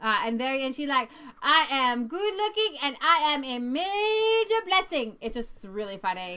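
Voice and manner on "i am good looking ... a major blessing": emphatic, heartfelt, every word pressed with conviction. Retelling a woman's affirmation at an event: imitating a woman's emphatic declaration. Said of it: "very much, uh, emphasis on it as she believed it".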